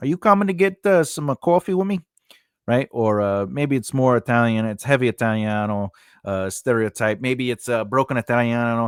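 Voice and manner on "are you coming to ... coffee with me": Long Island way of speaking. Showing how an actor reads a line: Long Island accent. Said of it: "Has a Long Island accent".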